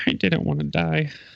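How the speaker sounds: high-pitched mumbling to himself. Voicing Gloob, who hangs his head and talks to himself: quiet mumble as Gloob. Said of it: "just quietly mumbles to himself".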